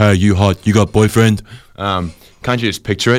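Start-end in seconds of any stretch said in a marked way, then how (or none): 0.0-1.4 greasy put-on security guard voice. Acting out a made-up rave scene: voicing a greasy security guard. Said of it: "a greasy security guard comes up behind you, grabs your ass and says".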